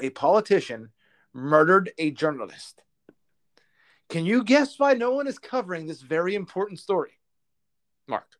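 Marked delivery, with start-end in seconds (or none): 0.0-2.8 very slow, deliberate delivery, each word weighed. Host speaking to the other speaker about a news story, said slowly. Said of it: "I'll say it slowly".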